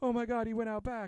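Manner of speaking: shrill, very high screaming cry. Speaker recounts a scene where a woman in a bar calls the cops; mimicking a scream. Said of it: "she just sinks to the floor screaming".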